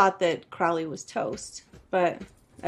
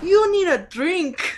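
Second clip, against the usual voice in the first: put-on horrible Russian accent, very high and slow; 11 semitones higher, 5 dB louder than usual. Quoting a Russian man's lines: horrible Russian accent. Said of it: "He has a horrible Russian accent".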